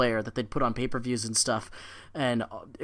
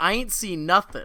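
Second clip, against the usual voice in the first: mock deadpan delivery, higher pitch; 7 semitones higher than usual. Quoting a kid from the show who won't talk: imitating a kid's deadpan delivery. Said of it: "The deadpan legend".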